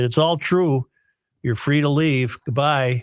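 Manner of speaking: usual speaking voice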